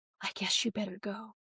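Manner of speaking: put-on muttering. Retelling a mother's reluctant permission to leave: imitating muttering under her breath. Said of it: "under her breath".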